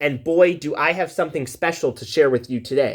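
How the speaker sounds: ordinary delivery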